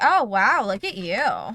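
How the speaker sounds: put-on, very drawn-out, loud sarcastic tone. Retelling a coworker's reaction to a French word: imitating a sarcastic coworker. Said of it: "clearly being a sarcastic asshole about it".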